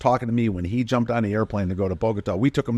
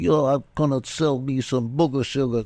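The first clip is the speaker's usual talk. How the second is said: playful, kidding, put-on New York accent; 3 semitones higher than usual. Recalling a very funny guy who'd break into a joking new york accent. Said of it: "he'd break into his kiddingly New York accent".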